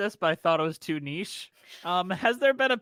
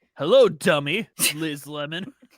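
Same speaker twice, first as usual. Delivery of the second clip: put-on seductive voice, lower and louder; 3 semitones lower, 5 dB louder than usual. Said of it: "trying to sound, like, all sexy, like, seductive".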